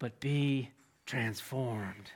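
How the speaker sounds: low, hushed, confiding pitchman delivery. Retelling a man who leaned in while pitching a movie, imitating the pitching man. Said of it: "I can't do it like him".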